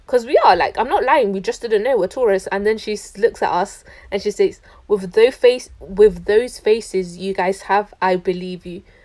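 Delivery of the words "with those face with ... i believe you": ordinary talk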